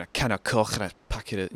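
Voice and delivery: attempted, put-on Liverpool Scouse accent. Explaining accent convergence, demonstrating going up to someone in a scouse accent. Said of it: "like start doing the Scouse accent".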